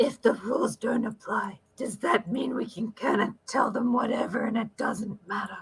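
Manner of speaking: hushed stage whisper, kept just audible. Leaning in to another character in a game and asking quietly: whisper. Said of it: "I'll whisper to him".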